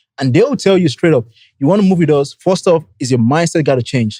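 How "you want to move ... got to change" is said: ordinary delivery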